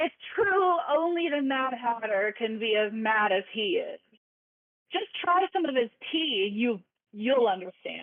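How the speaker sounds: irritated, annoyed, frustrated, thoroughly over it. Voicing the dormouse who wants no part of this: acted annoyed and frustrated. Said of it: "He's so annoyed, so frustrated".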